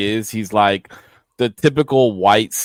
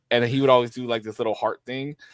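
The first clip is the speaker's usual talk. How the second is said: ordinary delivery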